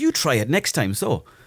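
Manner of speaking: acted-out, mad, cutting, angry delivery. Retelling answering a heckler after a bad gig: retelling an angry retort. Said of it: "I was fucking mad".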